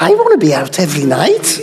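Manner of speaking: put-on Liverpool Scouse accent. Voicing a woman's real thoughts against the stated wishes, Liverpudlian accent. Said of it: "the thought in her Liverpudlian accent".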